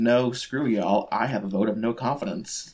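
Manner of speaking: usual speaking voice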